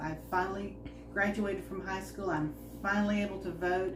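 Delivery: ordinary talk, nothing marked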